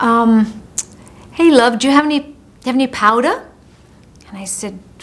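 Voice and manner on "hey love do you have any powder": put-on Liverpool accent, much slower. Quoting a young man who came out of the press room, thick Liverpudlian accent. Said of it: "said in a thick Liverpudlian accent".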